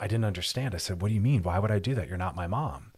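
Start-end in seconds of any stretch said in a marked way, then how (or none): none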